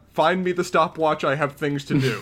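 normal talking voice

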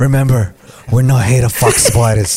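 dying man's parting voice. Acting out a dying Uncle Ben speaking to Peter: dying Uncle Ben voice. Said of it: "Uncle Ben's dying there like this".

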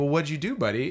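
ordinary talk

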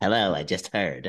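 low, eerie, creepy voice. Describing a woman who popped around the corner, the speaker is imitating her creepy greeting. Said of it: "That's a good imitation".

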